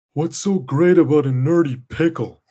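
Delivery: bored cartoon voice. Describing a cartoon episode, the speaker quotes Patrick: mock-bored Patrick Star impression. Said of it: "He sounds bored when he just goes".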